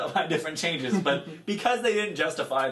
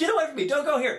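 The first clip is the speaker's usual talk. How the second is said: mock very high, shrill yelling; 13 semitones higher than usual. Recapping a show, acting out a man yelling at a kid, imitating someone yelling. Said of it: "he kept yelling at the kid like".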